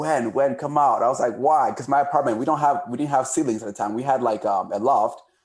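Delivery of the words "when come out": mock yelling, slower pace. Telling how friends got home at midnight and called out, retelling a yell. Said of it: "they yelled like".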